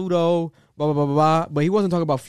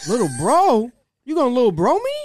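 high-pitched, loud spazzing outburst. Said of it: "Kanye spazzes".

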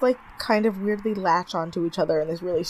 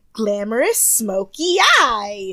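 loud, ridiculous delivery with "eye" stretched and drawled; 3 semitones higher, 7 dB louder than usual. Retelling how Jay Manuel announced the challenge: imitating Jay Manuel's ridiculous delivery. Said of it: "I'm gonna say it the way he said it".

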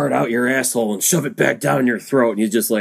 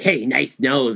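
goofy, ridiculous cartoon character voice. Recapping a movie, speaker quotes a character harassing another: ridiculous cartoony voice. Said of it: "he just says it in like this ridiculous cartoony voice like that".

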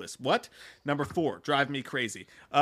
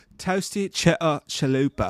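put-on British rocker accent. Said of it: "That's the best accent I've ever done".

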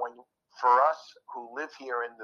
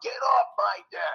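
mock raspy, rough, creaky yelling scream. Retelling screaming at a stranger on his deck: retelling his own scream. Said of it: "and I screamed out".

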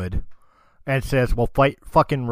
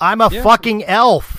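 loud in-character outburst, higher and louder; 11 semitones higher, 8 dB louder than usual. Answering another player in character, angry about elf status: very loud in-character retort. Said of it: "Fran says very loudly in character".

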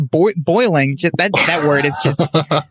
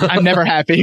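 normal talking voice

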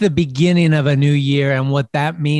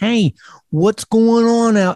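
slight New York accent, pitched up; 7 semitones higher than usual. The Talkin Schmidt host greets the audience: a little New Yorkish. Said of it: "so I'm sounding a little New Yorkish".

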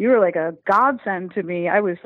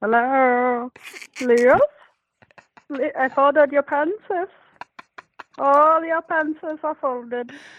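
high-pitched put-on Norwegian accent; 6 semitones higher than usual. Imitating a housekeeper from growing up, in an imitated Norwegian accent. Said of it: "we had a housekeeper growing up who was Norwegian, ... but she sounded like this".

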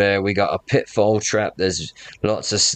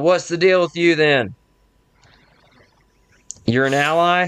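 high shout, called out loudly; 8 semitones higher than usual. Voicing a guard on a wall questioning a stranger: yelling down from a wall. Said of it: "another lady yells down to you".

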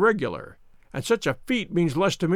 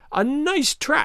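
snarling cry, very high; 9 semitones higher than usual. Narrating a mystery as handcuffs click shut, a man cries out, high and snarling. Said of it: "cried the high, snarling voice".

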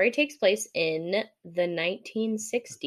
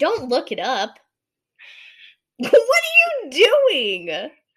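very loud, booming, drawn-out holler; 8 semitones higher, 8 dB louder than usual. Speaker tells a listener to stop looking it up, yelling. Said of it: "Sorry if I'm yelling in everyone's ears".

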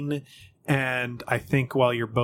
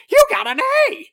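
very loud, very high raven squawk; 10 dB louder than usual. Voicing a raven that lands beside the players: raven call voice. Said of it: "You gotta work on your calls there".

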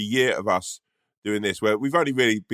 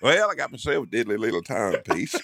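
put-on cowboy voice. Acting out a Western scene as the guy with a pocket watch: put-on cowboy voice. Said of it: "if you were a cowboy".

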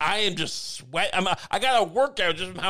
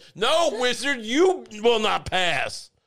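put-on wizard voice, yelling and drawn out; 4 semitones higher than usual. Joking about a fitness game, voicing a wizard yelling at the player. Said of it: "a wizard yelling at me".

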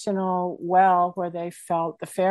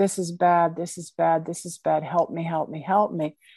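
put-on begging, mock-pleading tone.

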